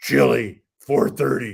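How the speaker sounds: put-on low voice. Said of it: "he had this real low voice".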